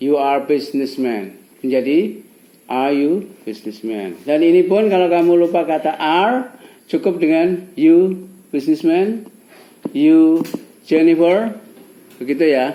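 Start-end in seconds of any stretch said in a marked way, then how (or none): 9.9-11.5 rising question tune lifting on Jennifer. English lesson on dropping are in questions, questioning tone on you Jennifer. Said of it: "Dengan nada bertanya".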